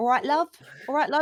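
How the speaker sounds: loud, high Cockney accent. Showing how the speaker slips into Cockney when riled up: Cockney accent. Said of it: "I tend to go Cockney".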